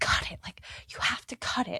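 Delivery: mad, insistent, loud angry stage whisper. Retelling how a woman kept telling the sound guy to cut it, mimicking a loud whisper. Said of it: "she was like loudly whispering".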